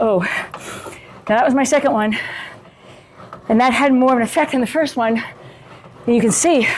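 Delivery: out of breath, catching breath while speaking. Speaker just finished a second round of exercise, catching breath. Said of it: "I can't catch my breath as quickly".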